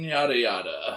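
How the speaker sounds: usual speaking voice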